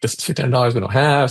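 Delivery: mock irritated, angry, fed-up scolding complaint. Retelling how a father reacted after coming home from work, imitating an angry father. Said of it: "he was pissed 'cause he was like".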